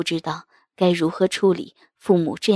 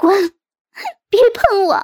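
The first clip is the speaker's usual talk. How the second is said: very high, shrill, loud shout through tears; 8 dB louder than usual. A mother cries out as the father grabs hold of her; crying and shouting. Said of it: "哭泣地大叫一声".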